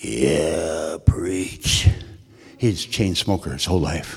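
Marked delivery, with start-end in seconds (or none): 0.0-1.9 real rough raspy voice, drawn out. Visiting Lon in the hospital, the speaker quotes his reply: Lon's raspy voice. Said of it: "Real raspy voice".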